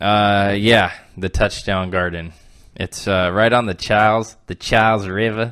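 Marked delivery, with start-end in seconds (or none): 1.2-5.5 Boston way of talking, put on. The speaker briefly shows off their own Boston accent, then asks not to repeat it. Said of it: "that's my Boston accent".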